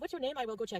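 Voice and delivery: put-on kindly, helpful-sounding French Canadian accent. Retelling what a volunteer said in the waiting room: imitating a french canadian accent. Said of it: "I'm just gonna try to imitate it".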